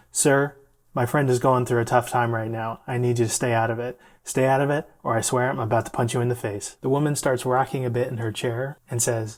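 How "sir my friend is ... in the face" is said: ordinary delivery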